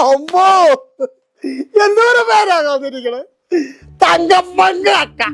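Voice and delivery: loud, wailing cry.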